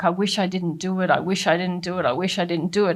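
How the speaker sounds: put-on tearful crying voice. Retelling how someone kept crying over what he did: imitating someone crying. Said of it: "he'd be crying and crying, like".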